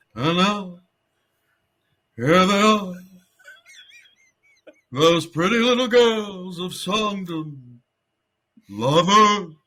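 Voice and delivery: very slow, drawn-out, unhurried emcee-style delivery. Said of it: "bet you can't talk slower than anyone".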